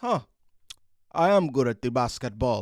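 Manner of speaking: put-on terrible Eastern European accent, dropped way down, very deep. Recapping the playoffs, voicing Nikola Jokic with the MVP trophy: bad Nikola Jokic impression. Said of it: "That's a terrible Eastern European accent".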